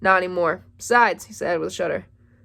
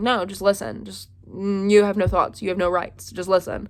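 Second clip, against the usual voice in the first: usual speaking voice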